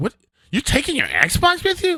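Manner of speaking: high, far-off, mocking voice with attitude. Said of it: "she's starting to get an attitude".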